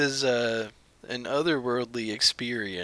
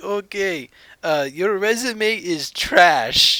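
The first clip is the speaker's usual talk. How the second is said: very loud, pitched-up put-on Indian accent; 8 semitones higher, 10 dB louder than usual. Retelling a job call from a caller: imitating the caller's indian accent. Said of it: "a polite little Indian man".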